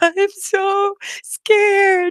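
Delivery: put-on, weepy, very high sobbing voice. Retelling a phone call with a baby sister during a tornado warning, retelling own sobbing. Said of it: "And I was just like sobbing".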